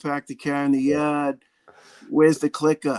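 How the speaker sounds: ridiculous put-on Boston accent. Asked about the boston accent, demonstrating a boston accent. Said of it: "that ridiculous Boston accent".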